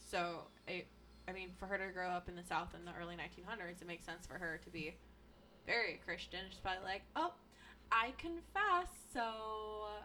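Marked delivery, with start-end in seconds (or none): 7.2-9.9 put-on, laid-on Valley Girl accent. Discussing a Southern woman from the early 1900s, imagining her confessing, Valley Girl voice. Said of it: "I'm giving her a Valley Girl voice".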